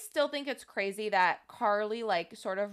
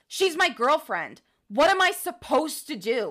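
mock grave, cutting delivery, slightly raised voice; 6 semitones higher, 6 dB louder than usual. Retelling the climax of an argument scene: imitating Nathan Kress, serious and cutting. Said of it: "very seriously and very cuttingly says".

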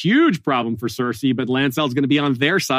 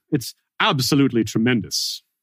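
rough attempt at British accent. Asked by another speaker to try it, speaker says a quoted phrase in an attempted British accent. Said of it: "your best approximation".

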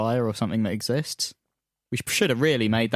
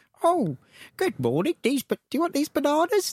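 put-on voice, very high, sing-song. Describing someone doing different characters in the morning: James Acaster impression. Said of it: "That was meant to be James Acaster".

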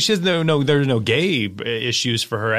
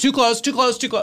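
mock yelling, much higher, faster; 9 semitones higher than usual. Speaker recounts people in line behind her standing too close, retelling a yell. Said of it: "I'm yelling".

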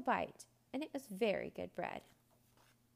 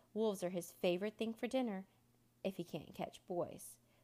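ordinary delivery

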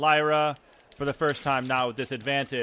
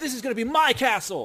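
put-on very high, cartoonish anime boy voice; 11 semitones higher, 4 dB louder than usual. Narrating a tabletop fight, voicing an enemy warrior: anime boy voice. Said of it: "the anime boy voice".

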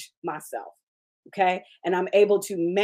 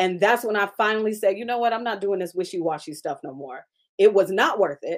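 normal talking voice

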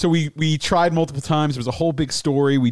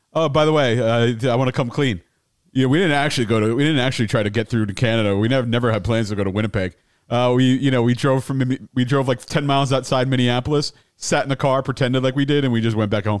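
plain

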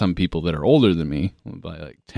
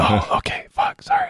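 put-on drunk voice, higher pitched. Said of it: "drunk off my ass".

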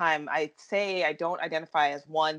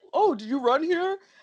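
very high-pitched put-on voice; 11 semitones higher, 3 dB louder than usual. Retelling what Lou's family would always ask: imitating Lou's family. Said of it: "I have to do that voice".

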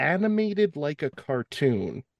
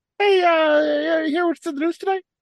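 very high, loud, chirpy host voice, stretched uh; 12 semitones higher, 6 dB louder than usual. Doing an impression after being asked for Martha Stewart: Jay Leno voice. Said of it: "you are doing Leno as Martha Stewart".

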